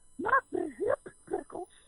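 put-on very high, comic Italian accent. Retelling what a man yelled from the other room, in a funny high italian voice. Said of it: "He's got this funny high Italian voice".

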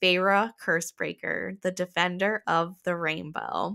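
ordinary delivery

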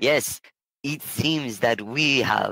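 put-on, slow, bad, fake German accent. Voicing the other guy's reply in the story, in a bad German accent. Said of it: "says in a bad German accent".

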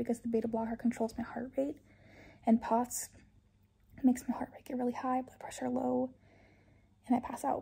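out of breath, winded voice. Speaker giving an update after a hospital stay, out of breath. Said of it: "I'm out of breath from doing nothing".

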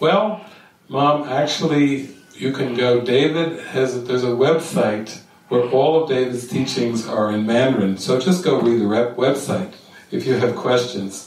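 normal talking voice

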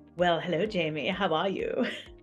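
put-on prim and proper British accent. Greeting Jamie at the start of a chat, prim and proper British accent. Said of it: "I feel like we're in Britain talking all prim and proper".

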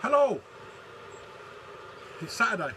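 breathless, panting, puffed-out hello, pitched very high. Speaker greets after chopping down conifers around the pool, out of breath. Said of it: "I'm out of breath, I'm puffed out".

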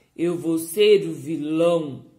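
low, thick, heavy character voice. Narrator reads the thumb's line as the story's villain, thick, deep voice. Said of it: "falou com voz grossa o polegar".

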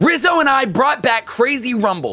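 hyped, energetic YouTuber intro voice. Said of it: "channel my inner Mister Beast".

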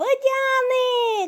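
very high, gleeful, joyful, drawn-out shout. A boy points something out to his father, shouting joyfully. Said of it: "закричав він радісно".

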